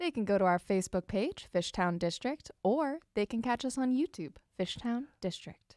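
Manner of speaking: smooth, pleasant and uplifting delivery. Telling the morning audience where to watch the show; smooth pleasant voice. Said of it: "You got to put on that smooth voice".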